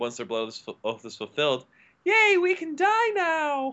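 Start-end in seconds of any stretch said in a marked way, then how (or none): 2.0-3.7 very high-pitched, slow, drawn-out voice. Recounting a dark joke from the series, quoting characters in a very high-pitched voice. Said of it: "in very high-pitched voices".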